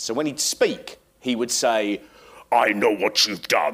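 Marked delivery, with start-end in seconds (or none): 2.5-3.7 put-on garbled, distorted voice, lower. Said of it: "Nails had a voice on television they distorted".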